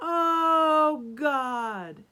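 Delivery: booming, very loud voice with drawn-out "oh". Retelling how the Pharisee walked into the temple to pray, great big loud voice. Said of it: "in a great big loud voice".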